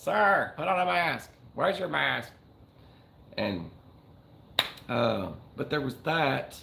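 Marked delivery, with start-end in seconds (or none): 0.0-2.3 put-on high, rough, crackly, creaky elderly woman's voice. Recalling a dream about someone in the background, old lady voice. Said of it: "an old lady's voice in the background go".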